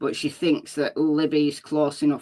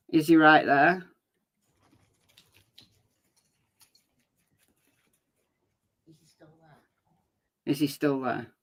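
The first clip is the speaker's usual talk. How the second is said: little, small voice, repeated. Demonstrating how the question might have been said, small voice. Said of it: "a small voice".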